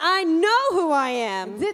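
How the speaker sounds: very loud, emphatic, said with conviction. Leading repeated affirmations for a translated audience, saying it like you mean it. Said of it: "Now say it like you mean it".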